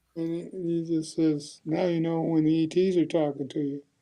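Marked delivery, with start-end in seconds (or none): none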